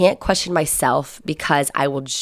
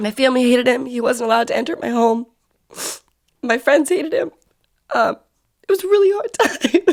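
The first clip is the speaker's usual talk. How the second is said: tearful crying voice, pitched up; 9 semitones higher than usual. Telling listeners about a hard relationship, crying. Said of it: "I'm so crying".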